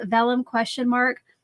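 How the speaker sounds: ordinary delivery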